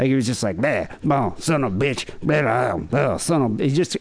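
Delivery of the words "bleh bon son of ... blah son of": put-on slurred, mumbling, hard-to-understand carny voice. Retelling how a relative by marriage spoke: imitating a mumbling carny. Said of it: "he spoke like a carny, really hard to understand".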